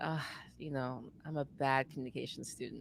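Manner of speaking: tired, worn-out, exhausted, low and soft. Retelling what they said about being a bad communication student: acting exhausted, a little deeper. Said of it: "probably a little deeper".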